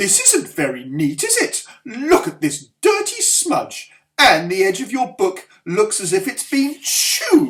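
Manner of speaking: loud swooping scolding. Narrator reading a teacher checking a pupil's workbook, Mrs Collins scolding. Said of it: "said [name], / she scolded, / Back in the classroom, everyone settled down at their tables. "We'll do our writing first, shall we?" said [name], "and after that we'll reward ourselves with a story."".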